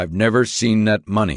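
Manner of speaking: ordinary delivery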